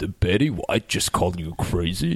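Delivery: put-on low, really deep dude voice. Recounting a film scene to a co-host, imitating a guy with a really deep voice. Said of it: "the dude with the really deep voice who goes".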